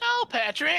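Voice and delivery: very high, loud squeal. Showing the others how SpongeBob sounds, call out to Patrick in a SpongeBob voice. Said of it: "that's how SpongeBob sounds, right?".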